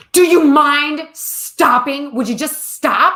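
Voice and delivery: loud, intense screaming. Retelling how a stranger in a store yelled at the speaker: imitating a man screaming. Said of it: "the man next to me screams at me".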